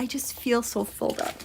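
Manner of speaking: tearful, overcome voice on the verge of tears. Pointing out a chart over Washington, D.C. to you guys: on the verge of tears. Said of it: "I am going to cry".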